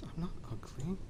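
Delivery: very quiet, barely audible, small high voice. A narrator voicing a character's reply after the king insults him, very quietly. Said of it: "Kip very quietly says".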